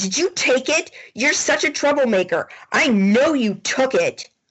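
angry, accusing, high-pitched, pissed-off tone. Voicing the student accusing another of taking it: pissed-off accusation.

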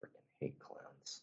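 barely audible, whispered mutter under the breath. Tabletop player speaking in character near a fellow agent, mumbled under breath. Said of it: "I'll mumble under my breath".

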